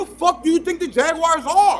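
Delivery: yelling, voice shooting way up high. Arguing about the Jaguars, yelling at the other speaker. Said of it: "Why are you yelling at me?".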